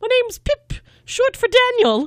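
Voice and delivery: ridiculous put-on British accent, very high and loud. Describing a podcast host reading an ad, in a ridiculous British accent. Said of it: "saying the like the ad in this British accent".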